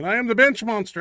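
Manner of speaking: loud, excited shouting. Introducing the show with a co-host, yelling. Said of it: "I don't know why I yell every time I say that".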